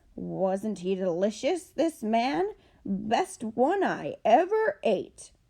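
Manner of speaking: shouted, growling bear voice. Narrator in a canoe pretends to be a bear, shouting in a growly voice. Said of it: "shouted in a growly voice".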